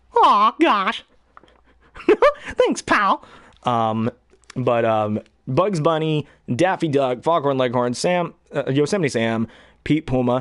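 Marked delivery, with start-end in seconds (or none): 0.2-3.3 very high, sing-song, swooping cartoon mouse voice. Talking about the first voice ever learned, doing a Mickey Mouse voice. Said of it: "The first voice I ever learned was Mickey Mouse".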